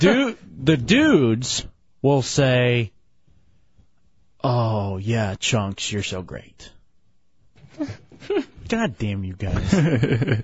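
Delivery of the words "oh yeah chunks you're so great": sexy moan. Showing how the dudes should say Chunks' name, in a sexy moaning manner. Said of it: "you're essentially going to moan Chunks' name".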